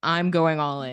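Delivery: put-on earnest, no irony. Retelling a lady's words before a laughing crowd: imitating earnest delivery. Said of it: "so earnestly with, like, completely no irony".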